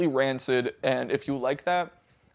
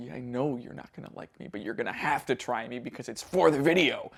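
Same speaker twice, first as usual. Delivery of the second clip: most menacing voice possible, full-on; 3 semitones lower, 5 dB quieter than usual. Voicing the package he must try for the video: mock-menacing voice. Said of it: "in the most menacing voice possible".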